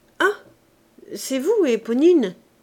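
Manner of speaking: slightly awkward, embarrassed. Answering the young woman who has just addressed him, with some embarrassment. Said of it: "répondit avec quelque embarras".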